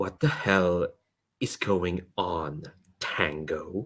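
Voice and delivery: very soft, low, resonant, hushed sonorous tone. Narrating a scene, voicing a woman who suddenly speaks up, in a sonorous voice. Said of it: "you hear this rather sonorous voice just go".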